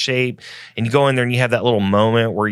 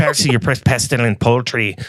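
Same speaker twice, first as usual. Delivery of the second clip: put-on leprechaun-pirate accent; 2 semitones higher than usual. Reading a line addressed to Percy; leprechaun pirate voice. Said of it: "feel like you were like a leprechaun pirate".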